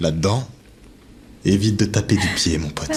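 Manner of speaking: odd, small, innocent-sounding weird little voice. Answering a request to lower the light: strange little voice. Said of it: "C'est quoi cette voix ?".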